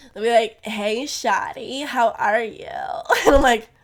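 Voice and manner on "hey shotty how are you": slow, put-on Los Angeles accent. Imitating how the boys there talk: LA accent. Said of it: "anyone who has an L A accent".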